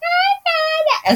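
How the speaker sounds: very high, shrill, piping, squeaky little voice. Retelling meeting a friend's friend, imitating a shrill little voice. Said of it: "tiene esa vocecita así toda pituda".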